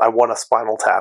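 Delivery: plain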